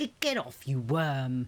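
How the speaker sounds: ordinary delivery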